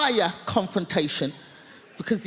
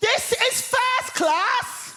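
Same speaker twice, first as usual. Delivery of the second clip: very high, slow, drawn-out top-of-voice shout. Retelling how a woman in a first class carriage shouted at them, retelling a shout. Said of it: "at the top of her voice, she shouts".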